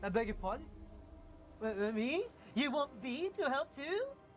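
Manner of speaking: animated cartoon character voice. Reading a character's reply in a story, South Park character voice. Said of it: "that started sounding like a South, South Park character".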